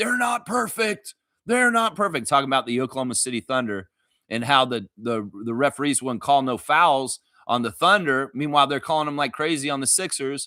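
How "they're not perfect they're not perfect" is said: play-acted shrill complaining shout, pitched very high. Retelling a coach yelling at the refs: imitating Nick Nurse yelling. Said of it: "Nick Nurse yelling at the refs".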